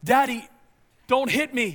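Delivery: loud, drawn-out, slow mock yell. Retelling hearing a voice in the dark at home: imitating someone yelling. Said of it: "I hear this voice yell out".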